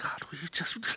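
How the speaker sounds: soft whispered mutter under the breath. Showing how a timid prayer would sound: imitating a prayer under the breath. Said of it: "He doesn't pray under his breath".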